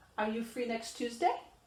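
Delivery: rising tune with pitch climbing on Tuesday. Teaching English question intonation with a yes-or-no example, rising intonation. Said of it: "You should have a rise".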